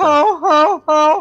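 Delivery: high, loud honk like a hurt goose. Mocking how Lita sounds when talking on the mic: Lita as a hurt goose. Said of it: "She kind of sounds like a hurt goose".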